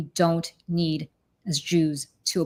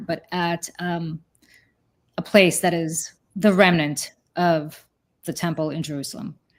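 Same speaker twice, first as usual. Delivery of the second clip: tearful, close to crying, holding back tears. Speaking of their son's bar mitzvah, the speaker is about to cry. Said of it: "I'm about to cry here".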